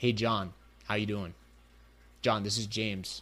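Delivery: low, flat, settled tone, falling. Showing his tone when selling on a call: flat, downward tone. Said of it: "You'll notice the tonality comes down, right? It's down, it's flat".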